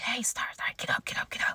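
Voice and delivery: very quiet, hushed, urgent, pressing whisper. Retelling being woken from sleep by someone whispering to her, retelling an urgent whisper. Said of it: "she's like whispering to me".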